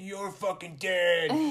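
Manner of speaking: high-pitched, heated, angry outburst. Retelling how a girl outed herself to her grandparents, in a mock-angry voice. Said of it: "in an angry voice".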